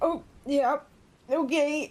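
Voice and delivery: put-on high, choked, startled voice. Retelling how a woman reacted to what he said, imitating a surprised choke. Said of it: "choke on your saliva for".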